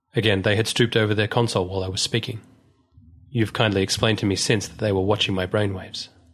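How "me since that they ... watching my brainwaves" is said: plain reading voice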